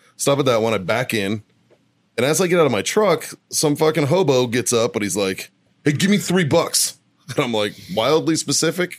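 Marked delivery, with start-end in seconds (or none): 5.9-7.0 mock pushy, high, aggressive in-your-face delivery. Retelling a man who approached as he got out of his truck, acting out an aggressive demand. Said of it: "he was real like aggressive about it".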